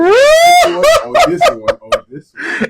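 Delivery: very high, loud, slow voice. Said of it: "trying to find out which voice".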